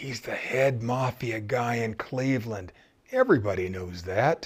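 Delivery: low, secretive, conspiratorial hushed half-whisper. Retelling the reply of the man at the next table: retelling a conspiratorial half-whisper. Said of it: "whispered in a conspiratorial voice".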